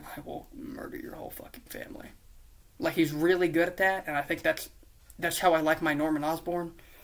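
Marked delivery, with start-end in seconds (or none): 0.2-2.1 hushed, whispered, deadpan menace, acted out. Describing the kind of character an actor plays well: mock deadpan threat.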